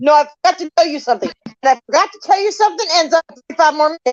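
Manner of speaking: put-on Bulgarian-accented speech. Retelling how dad calls him back: imitating dad's thick Bulgarian accent. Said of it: "that thick Bulgarian accent".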